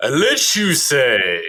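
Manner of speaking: slow, deliberate adult dragon voice.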